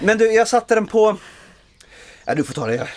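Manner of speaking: breathless, winded speech. Just back from running, speaker hands the turn to the other speaker: out of breath. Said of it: "Du är så anfådd".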